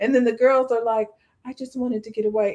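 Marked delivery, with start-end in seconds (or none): 1.5-2.6 soft, gentle, soft-spoken voice. Imitating the girls from an online video, soft voice. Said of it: "in a soft voice".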